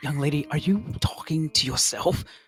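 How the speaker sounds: very hushed, barely audible whisper. Narrating a tabletop scene, voice a figure questioning the young lady in a very hushed whisper. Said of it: "You hear a very hushed whisper".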